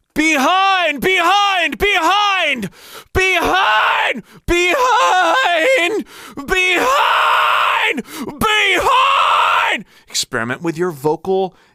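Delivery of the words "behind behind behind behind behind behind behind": very high, drawn-out yell breaking into false chord scream. Demonstrating the exercise on one repeated word: yell into false chord scream. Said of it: "transition into that false chord engaged scream".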